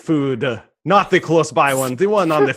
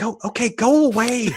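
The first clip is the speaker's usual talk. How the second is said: woman's voice, higher pitched; 8 semitones higher than usual. Voicing the woman hiding inside the closet: woman's voice. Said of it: "you should hear the woman's voice go".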